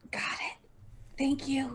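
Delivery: soft whisper.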